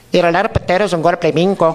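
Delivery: put-on Spanish accent. Showing listeners how to fake speaking Spanish abroad, phony Spanish accent. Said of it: "apply your phony Spanish accent".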